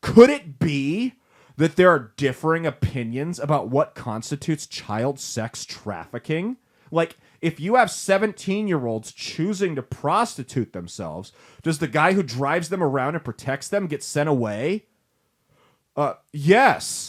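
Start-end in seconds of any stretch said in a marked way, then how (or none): none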